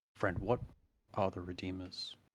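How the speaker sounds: hushed, quiet half-whispered voice. Braden asks the man he nudged about the Redeemers, hushed half-whisper. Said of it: "he asks in like a hushed kind of whisper".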